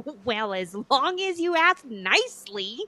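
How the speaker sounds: slow, dry, unimpressed sarcasm. Answering someone who says they asked nicely for a sword, sarcastic. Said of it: "Even I felt the sarcasm in that".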